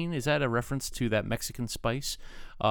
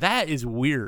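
ordinary talk, nothing marked

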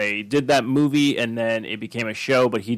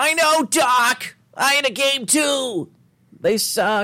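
bad put-on whiny voice, higher; 13 semitones higher, 3 dB louder than usual. Answering a Doc line in a horrible Marty McFly impression. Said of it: "That's a horrible Marty McFly".

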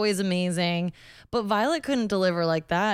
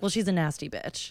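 put-on deadpan delivery, quieter; 3 dB quieter than usual. Retelling how someone answers a joke about another queen, mock-deadpan delivery. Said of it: "Like very. Deadpan".

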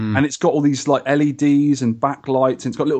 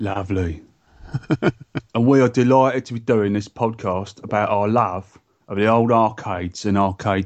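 low-pitched put-on London accent; 5 semitones lower than usual. A podcast host keeps up his new comedy voice while introducing the show, in a put-on London accent. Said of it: "I'm debuting my London Fug voice".

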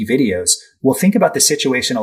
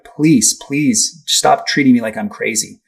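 put-on passionate pleading tone. Speaker retells a woman's plea to police, acting out passionate pleading. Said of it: "passionately pleading".

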